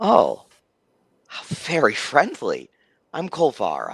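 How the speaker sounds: animated character voice with pitch swooping around. Voicing a character greeting a player's character: voicing Kolvara. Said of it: "looks at you and he says".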